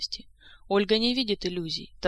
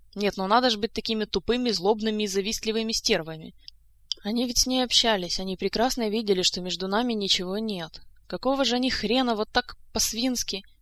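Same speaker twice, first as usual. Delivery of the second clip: ordinary delivery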